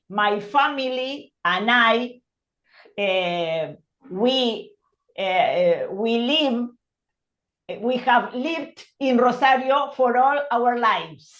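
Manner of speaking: plain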